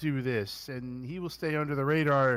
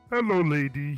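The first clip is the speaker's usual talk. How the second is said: loud, booming, badly done giant voice; 4 dB louder than usual. Quoting a movie line in a Fezzik voice. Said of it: "I can't do Fezzik's voice very well".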